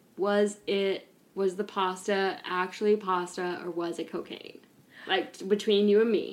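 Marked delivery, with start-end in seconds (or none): none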